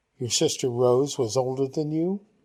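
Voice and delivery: ordinary talk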